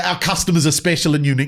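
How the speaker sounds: ordinary talk, nothing marked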